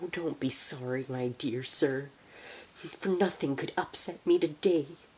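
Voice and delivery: high, loud, squeaking character voice. Narrating a man's reply to a gentleman who apologized, in a squeaky voice. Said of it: "he said in a squeaky voice".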